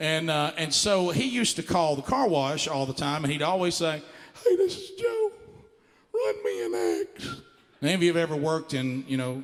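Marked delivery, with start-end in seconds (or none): 4.4-7.2 very high, slow, out-of-breath drawl. Retelling Joe calling the car wash: imitating Joe's high breathless voice. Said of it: "like he'd be running out of breath".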